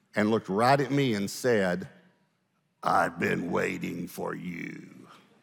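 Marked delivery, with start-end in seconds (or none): 2.8-5.1 low, slow demonic voice, not her own. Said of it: "a voice came out of her that was not her voice".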